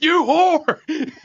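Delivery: very high screeching voice. Retelling an outburst while playing video games: imitating own past screaming. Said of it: "screaming obscenities".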